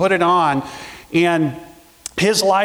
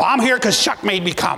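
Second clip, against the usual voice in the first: woman's voice, pitched up; 6 semitones higher than usual. Recalling how Donna answered when greeted at church, do a Donna impression. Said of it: "she would talk like this".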